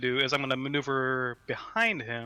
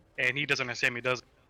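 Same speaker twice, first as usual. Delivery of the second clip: ordinary talk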